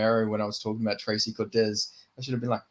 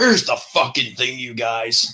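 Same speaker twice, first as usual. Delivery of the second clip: loud, raspy voice with an American accent; 6 dB louder than usual. Showing off a favourite impression after a remark on it: Sean Strickland impression. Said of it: "that fucking raspy American accent".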